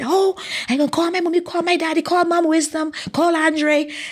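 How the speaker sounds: put-on thrilled, eager, excited, high-pitched outburst. Retelling hearing good news from the coach: imitating own past excitement. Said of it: "So I got all excited".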